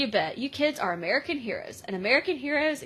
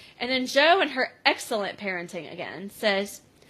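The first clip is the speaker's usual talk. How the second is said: usual speaking voice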